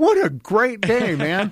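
put-on excitement, high and swooping. Redoing a morning greeting for another try with acted enthusiasm. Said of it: "Let's try that again".

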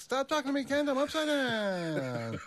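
very high, slow, squawking reporter voice.

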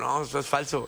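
plain

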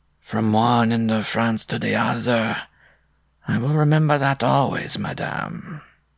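flat, monotonous drone under the breath. A narrator reads a man answering madame, droning in a monotonous undertone. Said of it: "he droned in a monotonous undertone".

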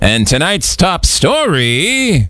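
news anchor voice, words drawn out. Improvising a little radio bit, in a news talk radio announcer voice. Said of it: "That's like a news talk radio station".

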